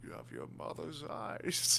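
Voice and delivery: slow, dramatic whispered delivery.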